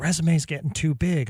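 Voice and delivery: hushed, whispering voice. Joking to listeners about a guest's long resume: whispering. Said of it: "I'm whispering".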